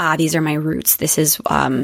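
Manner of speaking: ordinary delivery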